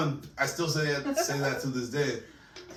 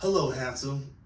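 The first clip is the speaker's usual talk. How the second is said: put-on girl's voice. Retelling a call to an automated service, speaking in the girl's voice. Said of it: "in the girl's voice, obviously".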